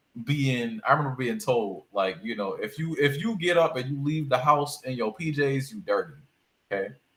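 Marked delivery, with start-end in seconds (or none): none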